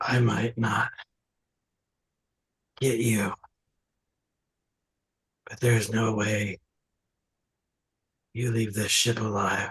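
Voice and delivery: ragged breaths, gasping between words. A dying character strains to speak to the Dragonborn; ragged, between breaths. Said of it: "in between ragged breaths".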